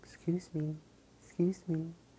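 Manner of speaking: put-on very high little girl voice. Retelling a little girl interrupting her at her station during a haircut, little girl's voice. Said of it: "in her little voice".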